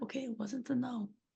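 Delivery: soft, muttered under the breath. Describing a character turning to the old man: muttered under their breath. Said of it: "under their breath".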